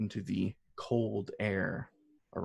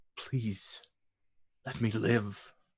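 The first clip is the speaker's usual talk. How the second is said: slower, begging, pleading whisper. Narrating a game, voice a grappled character who holds on and begs, begging whisper. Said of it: "He's whispering".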